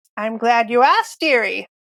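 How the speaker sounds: put-on old witch voice. Narrator voicing a witch answering a question about tools, old witch accent. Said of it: "my old witch accent".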